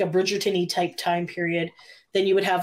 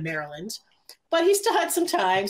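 ordinary talk

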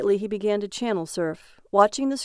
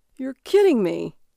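exclaiming while laughing wildly; 3 semitones higher, 5 dB louder than usual. Having jumped from his chair to look over the old man, laughing wildly. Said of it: "Barry cried out, laughing wildly".

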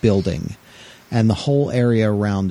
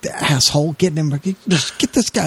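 put-on anger, reporter voice, much higher, slower; 6 semitones higher than usual. Retelling how a TV reporter reacted when a man walked in front of her camera, mock-angry. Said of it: "she gets all pissed off".

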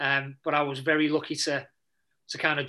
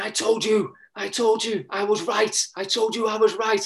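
mock screaming and crying, higher, slower; 7 semitones higher, 5 dB louder than usual. Retelling what the chairman shouted before the last game, imitating a screaming, crying man. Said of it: "He's come down screaming, crying".

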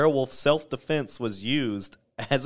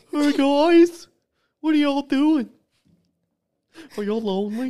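silly, goofy put-on furry voice, very high and loud; 7 dB louder than usual. Imitating a furry at the window talking to the group, in a goofy furry voice. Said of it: "He's got like a goofy-ass fucking voice".

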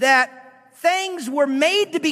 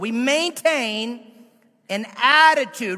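very slow, drawn-out, deliberate. Speaker repeating the number one point, very slow. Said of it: "Let me say it really slow".

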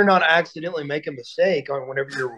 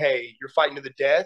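ordinary talk

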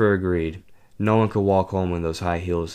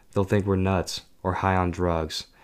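plain reading voice

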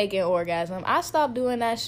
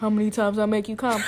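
usual speaking voice

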